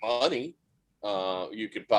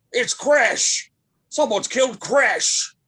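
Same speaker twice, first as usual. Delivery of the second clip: loud, very high, rough gruff call; 12 semitones higher, 6 dB louder than usual. A game master voices an unseen figure heard behind the players, gruff voice. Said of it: "you hear a gruff voice going".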